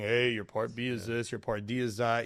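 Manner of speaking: mock monotone delivery. Mimicking how those other hosts usually talk, imitating a monotone speaker. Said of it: "They're very monotone".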